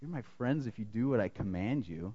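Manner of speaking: rejecting, disapproving voice, dropped very low and soft. Retelling how someone changed his tone, in a mock-disapproving tone. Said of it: "a voice of kind of disapproval".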